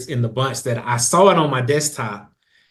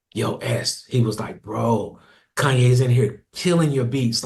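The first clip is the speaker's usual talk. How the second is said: mock hushed whisper. Retelling a phone call from someone outside the studio, imitating someone whispering. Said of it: "he's whispering".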